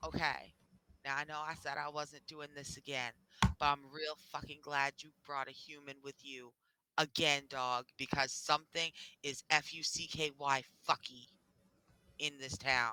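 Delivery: voice dropped to a hush. Retelling what a woman said while chaos went on around her, lowered voice. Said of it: "she lowers her voice and she goes".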